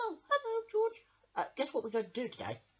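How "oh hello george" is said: very high, squeaky, high-pitched mouse character voice. Voicing Handy Mouse greeting George: Handy Mouse voice. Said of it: "let's get Handy Mouse to come up here now".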